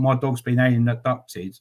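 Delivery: plain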